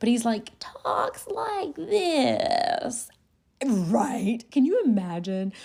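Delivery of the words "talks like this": put-on aged, complaining whine in a whiny, older-sounding voice. Speaker imitates how a man talks, imitating a whiny older voice. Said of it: "made him sound just like whiny".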